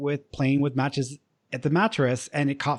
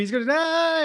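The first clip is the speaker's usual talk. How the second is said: put-on very high-pitched child screaming; 13 semitones higher than usual.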